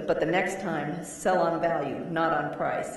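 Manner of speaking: frustrated, snapped voice. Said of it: "He goes".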